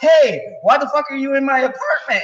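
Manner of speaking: mock angry yelling, very high, shrill, aggressive. Retelling what a man yelled at a woman in his apartment: retelling an aggressive yell.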